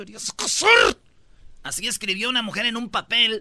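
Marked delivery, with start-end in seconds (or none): 0.0-0.7 mock seething angry woman voice, teeth clenched tight. Reading a note aloud: angry woman through gritted teeth. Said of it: "con tono de mujer enojada apretando los dientes".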